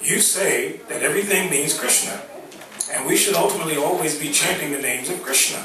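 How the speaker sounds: ordinary talk, nothing marked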